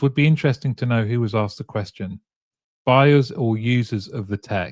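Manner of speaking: ordinary talk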